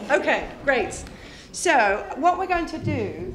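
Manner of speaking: loud projected voice.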